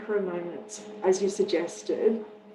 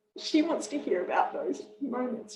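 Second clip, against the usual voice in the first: tearful, pitched-up voice, close to tears, barely holding on; 5 semitones higher than usual. Remembering someone who was very sick and itchy, speaking tearfully. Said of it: "I'm going to cry when I say this".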